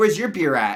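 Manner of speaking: pushy, demanding, aggressive, confrontational tone. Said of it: "Why is that so aggressive?".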